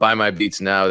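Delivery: plain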